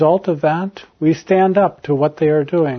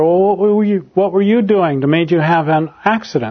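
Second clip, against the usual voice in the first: mock-angry, almost angry tone. Retelling an older woman's question to an accident victim, almost angry tone. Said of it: "in a very almost angry tone".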